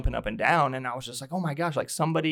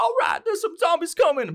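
very high, loud, swooping, badly off voice; 5 dB louder than usual. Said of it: "that's a horrible version".

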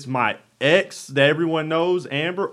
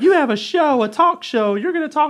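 put-on very high-pitched young woman's voice; 11 semitones higher than usual. Retelling messages from a young lady, imitating a young lady's voice. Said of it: "I just pictured that's how her voice sounds".

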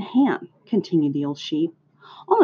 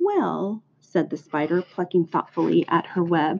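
plain reading voice

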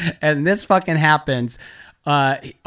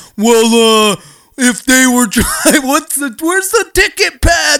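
mock dim-witted voice, much higher and louder; 8 semitones higher, 7 dB louder than usual. Retelling an encounter with armed guys, imitating how they sounded: offensive numbskull impression. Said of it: "it's literally how they sounded".

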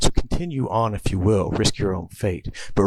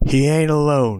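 sudden, high, loud shouted yell; 5 semitones higher, 5 dB louder than usual. Narrating a story, read a line called down from above, shouting. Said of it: "shouts a voice from above".

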